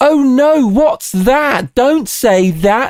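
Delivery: mock middle-class English girl. Discussing voice acting, speaker mimics what any middle-class english girl can do. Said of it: "something any middle-class English girl can do, where they go".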